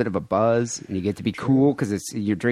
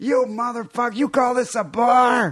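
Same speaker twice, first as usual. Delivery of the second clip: very high, shrill, fake-furious screaming fit; 12 semitones higher than usual. Acting out a complaint at a bar: mock angry screaming. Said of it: "start screaming at him".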